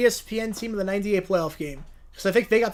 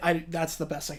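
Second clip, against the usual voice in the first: normal talking voice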